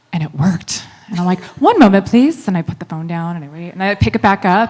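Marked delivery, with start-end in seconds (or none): 1.6-2.5 fake British accent, pitched up. Retelling answering a caller's phone as a receptionist: fake british accent. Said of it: "I answer the phone in a British accent".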